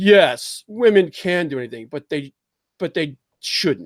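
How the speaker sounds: stilted, movie-dialogue style delivery. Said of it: "nobody talks like this in real life".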